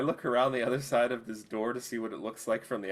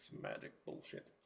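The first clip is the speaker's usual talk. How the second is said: quiet mumbling under the breath, quieter. Playing a character who mutters in reply during a conversation: muttering under breath. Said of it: "I mutter under my breath again".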